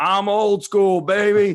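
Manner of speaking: very loud, very slow, booming, drawn-out coach-style bellow. Retelling the coach's answer about using software: imitating the coach's loud voice. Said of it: "with that voice".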